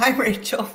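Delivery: talking through laughter. Greeting another speaker, laughing while talking. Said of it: "I'm laughing at myself".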